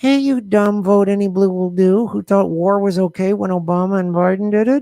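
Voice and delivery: fake sweet, syrupy, buttery put-on voice. Addressing an angry opponent after promising to calm down, in a fake sweet, buttery voice. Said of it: "I'll talk in a nice, buttery, sweet voice".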